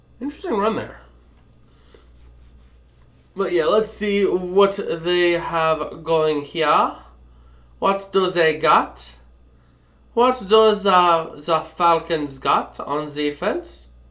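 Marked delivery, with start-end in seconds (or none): 3.4-13.9 slow, drawn-out, bad fake German accent. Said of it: "I tried going for German".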